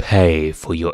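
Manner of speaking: plain reading voice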